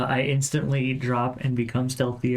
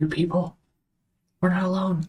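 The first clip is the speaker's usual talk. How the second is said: hushed whisper, higher; 7 semitones higher than usual. Speaking in character to the party over mental chat: whispering. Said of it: "I'm whispering".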